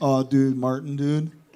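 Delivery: laid-back country man voice. Retelling teasing a friend by copying a stranger: imitating a laid-back country man. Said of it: "I started ambushing him with".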